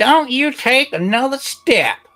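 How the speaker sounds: put-on very high-pitched, elderly old granny voice. Game master voicing Granny as a player lets himself into her house: old voice. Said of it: "you hear this old voice".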